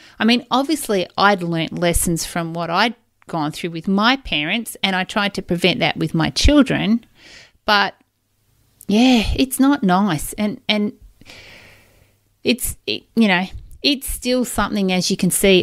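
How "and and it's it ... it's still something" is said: halting, stuttering speech. Struggling to put feelings about a divorce into words, stuttering. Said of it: "I'm stuttering a bit".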